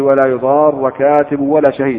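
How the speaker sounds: ordinary talk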